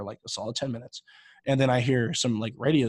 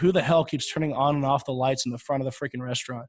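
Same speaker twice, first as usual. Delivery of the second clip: ordinary talk, nothing marked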